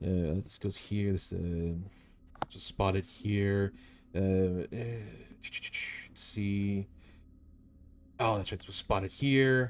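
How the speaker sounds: slow mumbling, muttering under the breath. Voicing a tall creature bent over a map: muttering to himself. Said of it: "you can hear him, like, m-, m-, muttering here and there".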